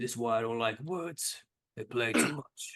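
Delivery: grumbly voice throughout the whole line. Narrating a story, the storyteller voices Kong's reply in a grumbly Kong voice. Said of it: "a grumbly voice of Kong".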